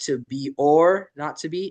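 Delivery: slow, stressed "or" lifted with a rise.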